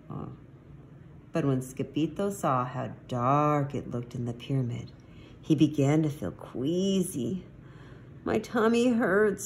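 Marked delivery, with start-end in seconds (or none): 8.2-9.5 small, high groan. Reading a story, a character feeling queasy in a dark pyramid speaks, groaning. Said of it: "he groaned".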